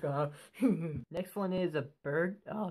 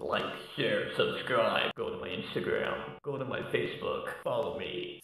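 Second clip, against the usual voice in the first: fake, put-on very low deep voice; 7 semitones lower than usual. Closing the video with a request to viewers: put-on deep voice. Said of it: "like my deep voice just said".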